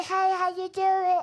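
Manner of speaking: put-on high puppet voice. Retelling how the voice was done for the kids: Elmo voice. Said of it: "I do a hella Elmo".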